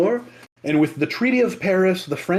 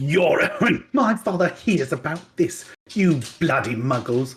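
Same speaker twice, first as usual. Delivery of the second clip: posh put-on character voice. Asked to channel a character, the speaker delivers his line; Draco Malfoy impression. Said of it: "channel Draco Malfoy".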